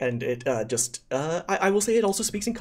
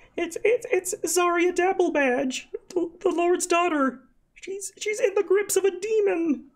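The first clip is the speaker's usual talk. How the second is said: sniffling, tearful gnome voice, higher pitch. Voicing a sobbing gnome explaining a demon: sniffling gnome. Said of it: "he kind of sniffles".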